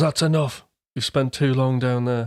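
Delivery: plain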